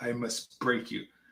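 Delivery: deep, dropped, low fighter-style voice. Joking about how strong a partner is: Ivan Drago impression. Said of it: "She is Ivan Drago".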